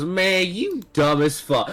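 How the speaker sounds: taunting, jabbing trash-talk tone. Voicing a character mocking another after taking damage: talking smack. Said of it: "he's just talking all this smack".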